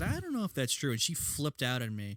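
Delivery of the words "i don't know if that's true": high, soft, very polite voice. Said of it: "very politely said".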